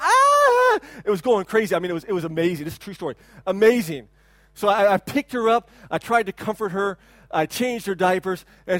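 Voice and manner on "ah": put-on very high, loud toddler-like scream. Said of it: "she was just screaming".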